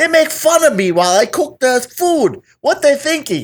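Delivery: very high, cartoonish put-on voice. Playing a cook complaining about being mocked, cartoonish voice. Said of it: "You sound like a cartoon".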